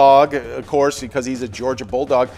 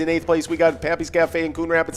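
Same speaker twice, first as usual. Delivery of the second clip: auctioneer voice with calling patter; 2 semitones higher, 4 dB quieter than usual. Announcing the location standings, done in a best-effort auctioneer voice. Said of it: "I'm going to do my best auctioneer voice here".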